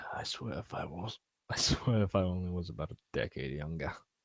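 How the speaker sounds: muttered under breath. A character reluctantly sheathes his sword and mutters under his breath. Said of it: "he mutters under his breath".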